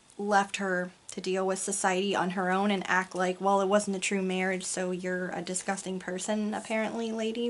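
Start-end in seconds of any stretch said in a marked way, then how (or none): none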